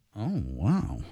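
flirtatious delivery in a low, hushed tone. Taking a turn at a flirty version of a phrase, flirty. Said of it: "Go for your flirty".

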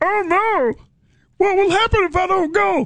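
very high-pitched little frog puppet voice. Retelling an ad for a church event, the speaker does Kermit the Frog voice. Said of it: "I used to do a Kermit".

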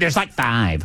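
play-acted, dismissive, offhand, brushing-off tone. Mocking how the other speaker answered a question: imitating a dismissive tone. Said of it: "but you went".

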